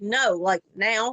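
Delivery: play-acted firm, no-nonsense, bossy mother voice. Speaker showing the tone she tried to use, imitating a mom's right-now tone. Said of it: "that's the tone of voice she tried to use".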